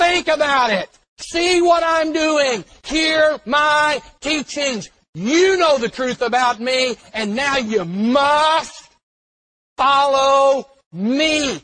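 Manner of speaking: authoritative loud delivery. Speaker acting out what Jesus will say, commanding voice as Jesus. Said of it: "with that commanding voice".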